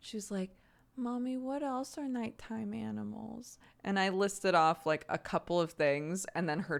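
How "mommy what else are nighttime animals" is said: play-acted drowsy, slow, hushed, drawn-out drawl. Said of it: "She was saying it all so slow and sleepy".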